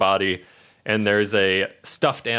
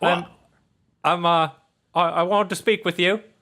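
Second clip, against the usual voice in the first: put-on teddy bear voice, higher; 8 semitones higher than usual. Voicing a rundown teddy bear who wakes a player: Patches teddy bear voice. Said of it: "the teddy bear, you hear a sound coming".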